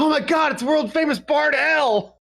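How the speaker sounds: shrill, very high shout at full volume. Spotting the person from the flyer showing up, shouting at the top of lungs. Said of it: "I shout at the top of my lungs".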